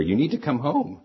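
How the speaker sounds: mild mock yell. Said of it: "She pretty much was yelling into the ear".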